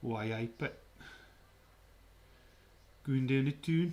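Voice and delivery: put-on Geordie Newcastle accent. Asked to do a Newcastle accent, the speaker obliges; Newcastle accent. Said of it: "You want a Newcastle accent?".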